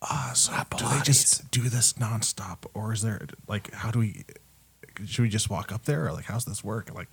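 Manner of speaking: whispered aside. As a hush falls over the crowd, a player whispers to Pilates, whispering. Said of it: "I whisper over to Pilates".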